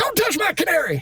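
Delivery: very high, gravelly, amped-up, unhinged, crazed voice. Showing how he amps up his gravelly voice: amped-up gravelly insane voice. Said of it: "amp it up".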